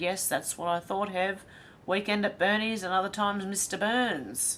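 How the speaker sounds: ordinary delivery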